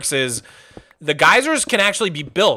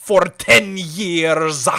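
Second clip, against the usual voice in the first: put-on pirate voice with Scottish accent. Doing an impression after being asked about it: Davy Jones voice. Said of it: "I totally forgot I had a Davy Jones".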